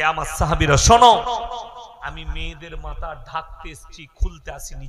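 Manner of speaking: ordinary talk, nothing marked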